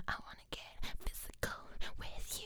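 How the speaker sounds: creepy, breathy whisper, slow and hushed. Retelling what a man whispered to the speaker during a music video; retelling a creepy whisper. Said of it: "whispering this and being really fucking creepy".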